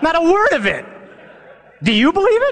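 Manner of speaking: put-on yelling.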